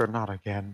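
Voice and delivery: faint, hushed half-whisper under the breath. Voicing a fatally wounded foe as the knives go in: half-whisper. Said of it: "you hear him just sorta whisper".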